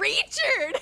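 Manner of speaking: very high, very loud, shrill thick Southern screech. Retelling how the grandma found them: imitating grandma screaming in thick Southern accent. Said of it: "is exactly how she screamed it".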